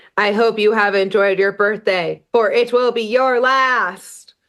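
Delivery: robotic, mechanical delivery, last word drawn out. Retelling what the thing emerging from the gift box says, robotic voice. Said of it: "it says in a robotic voice".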